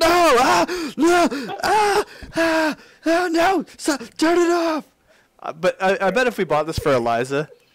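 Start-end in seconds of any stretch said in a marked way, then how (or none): 0.0-4.8 mock terrified shrieks, very high, very slow, drawn-out. Imagining being chased by the toy spider, pretend panicked yelling. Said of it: "I'm gonna be yelling".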